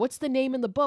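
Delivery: mock scream, high-pitched and rushed. Retelling a movie scene where a character panics: imitating someone screaming. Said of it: "she's screaming".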